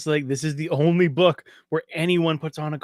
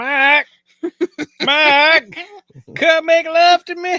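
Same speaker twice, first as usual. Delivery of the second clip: beautiful, very high, loud Southern accent; 13 semitones higher, 5 dB louder than usual. Speaker mimics a woman from a book they listened to, beautiful Southern accent. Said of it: "a beautiful Southern accent going".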